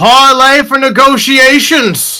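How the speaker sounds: very high hollering. Voicing an annoyed character greeting the group: NPC yelling. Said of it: "And he yells".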